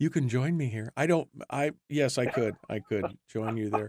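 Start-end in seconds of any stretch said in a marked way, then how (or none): 0.0-0.9 mock whispering, close and hushed. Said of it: "like I was whispering it into your ear".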